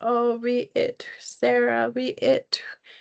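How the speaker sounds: very slow, drawn-out little whimper. A teacher demonstrates how to teach a word, with a little whimpering cry. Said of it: "maybe even have a little whimpering cry".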